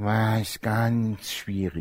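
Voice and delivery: exaggerated grumpy sulk, low, slow and soft.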